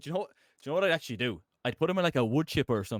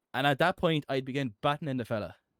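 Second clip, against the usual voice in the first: normal talking voice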